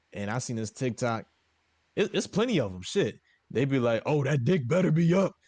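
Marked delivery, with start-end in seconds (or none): 4.1-5.3 put-on macho, manly, man-sized voice. Retelling TikToks of women coming home drunk: imitating a manly voice. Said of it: "they be having a manly fucking voice".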